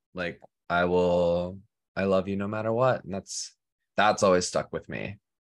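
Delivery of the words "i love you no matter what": put-on deadpan delivery. Speaker recounts someone's reaction, retelling a deadpan reply. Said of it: "but it was deadpan".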